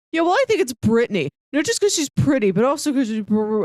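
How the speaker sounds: high mumble trailing off into a stammer. Retelling a Vine where a guy names the hottest girl: imitating mumbling and trailing off. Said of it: "he keeps mumbling and trailing off".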